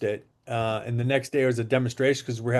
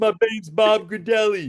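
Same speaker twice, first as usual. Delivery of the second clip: very high, folksy country-guy voice; 9 semitones higher, 4 dB louder than usual. Imitating how Bob talks: imitating Bob's country-guy voice. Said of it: "Country guy talks like this".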